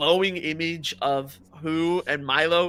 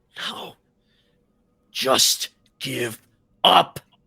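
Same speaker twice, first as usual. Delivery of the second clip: very slow, halting, hesitant, rough dragon voice; 3 semitones lower, 5 dB louder than usual. Voicing a dragon as it speaks to the players: hesitant dragon voice. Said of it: "hesitation in its voice as it speaks".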